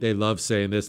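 ordinary talk, nothing marked

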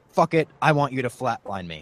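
ordinary delivery

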